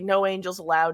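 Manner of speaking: normal talking voice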